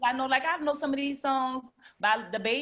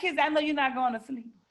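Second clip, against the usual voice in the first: ordinary talk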